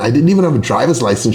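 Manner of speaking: usual speaking voice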